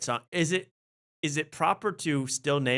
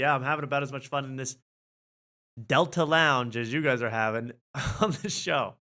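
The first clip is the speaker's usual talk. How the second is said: ordinary talk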